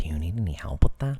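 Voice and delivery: weird, somber, very deep and very loud voice. Acting out the man who offered help while you looked at a laptop, imitating a weird, somber voice. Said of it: "weird, somber voice behind you is just like".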